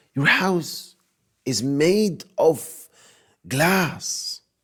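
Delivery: high, slow, drawn-out, emphatic delivery.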